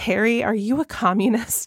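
hushed, quiet stage whisper. Recounting a funny fan-fiction scene, quoting a character's question in a hushed voice. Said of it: "in like a hushed voice".

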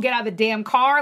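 ordinary talk, nothing marked

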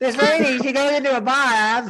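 put-on high-pitched, loud cockney accent. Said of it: "Cockney accent".

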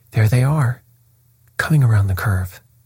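ordinary delivery

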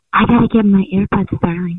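fake seductive voice. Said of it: "let me hear your sexy voice".

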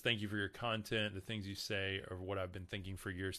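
plain

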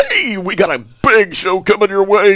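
put-on radio announcer voice. Showing what a radio voice is like: put-on radio voice. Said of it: "A radio voice is like this. It's all put on".

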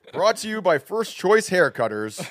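very loud, very high booming announcer voice. Speaker introduces a rock-paper-scissors game with friends, announcer voice. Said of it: "pretty good announcer voice".

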